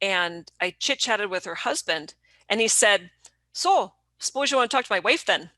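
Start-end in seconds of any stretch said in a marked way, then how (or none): 3.5-5.4 northern Minnesota way of talking. Retelling what the girlfriend's husband said on a call: Minnesota accent. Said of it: "obviously we do do talk like that up there".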